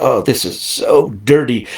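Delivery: very slow, drawn-out, prim, proper, fussy tone. Retelling how a mom at a monster truck pit party complained: imitating a prim and proper mom. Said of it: "she's all prim and proper".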